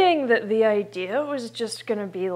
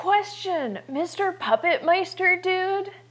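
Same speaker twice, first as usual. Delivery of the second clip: very high, shrill, shouted yell; 9 semitones higher than usual. Calling out a question to the puppet master, yelling. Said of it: "Why are you yelling?".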